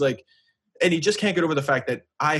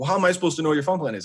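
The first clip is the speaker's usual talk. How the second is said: normal talking voice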